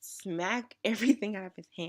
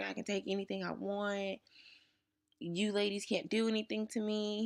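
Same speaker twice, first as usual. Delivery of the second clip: put-on swaggering, cocky, macho, boastful tough-guy voice; 6 semitones higher than usual. Speaker retelling a boy caught stealing taunting the ladies, imitating a macho boast. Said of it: "He just really felt macho".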